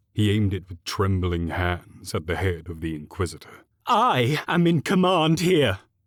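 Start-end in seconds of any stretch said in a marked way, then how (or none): 3.9-5.8 very high, loud, shrill screech. A governor aiming a pistol at the Inquisitor, in a high-pitched screech. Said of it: "the governor screeched in a high-pitched tone".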